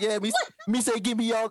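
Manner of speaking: put-on high-pitched Jamaican accent on every word. Retelling a story, voice the man demanding money in a Jamaican accent. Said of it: "He did a Jamaican accent".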